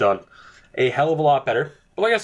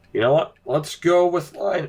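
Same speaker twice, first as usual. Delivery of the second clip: high voice breaking and failing partway through; 5 semitones higher than usual. Speaker announcing a draft pick as their voice gives out. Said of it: "the voice has given out".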